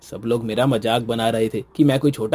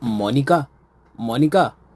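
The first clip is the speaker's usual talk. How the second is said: annoyed, angry, said twice; 2 semitones higher than usual. A husband comes home from the office calling for his wife, angry shouting. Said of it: "क्यों चिल्ला रहे हैं इतना?".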